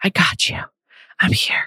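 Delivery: acted whispered voice. Retelling what he said while leaning in close: imitating Zach's whisper. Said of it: "he breaks into a whisper and gets really close".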